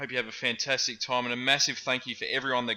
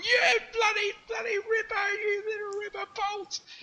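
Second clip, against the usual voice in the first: tearful, overjoyed, very high, drawn-out cheer. Retelling running down the street after the win: imitating own tearful cheering. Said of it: "running down the street in tears, just going".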